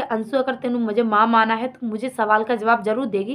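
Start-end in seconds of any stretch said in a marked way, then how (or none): none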